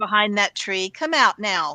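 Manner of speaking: put-on motherly voice. Speaker calling out to something hiding behind a tree, in a mom voice. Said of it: "the mom voice".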